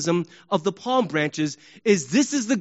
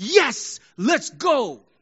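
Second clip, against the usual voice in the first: high, lifted, triumphant little cheer; 5 semitones higher than usual. Explaining how people shout after a score, imitating a triumphant shout. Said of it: "a shout of triumph".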